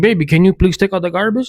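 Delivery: gentle, loving, sweet, polite tone. Showing the better way to ask a partner for a chore: sweet asking tone. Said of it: "But if you're like".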